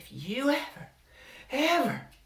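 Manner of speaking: horrible serpent-like woman's voice, very high and very loud. Narrator reading Mama's words to Byron in a horrible snake woman voice. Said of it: "Mama's horrible snake woman voice".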